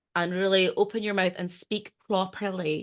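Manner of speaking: ordinary delivery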